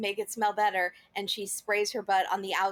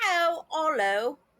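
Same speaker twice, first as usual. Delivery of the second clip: put-on Cockney accent, much higher and louder; 7 semitones higher, 3 dB louder than usual. Asked to say a hotel name in a British accent, use a Cockney accent. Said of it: "That's Cockney".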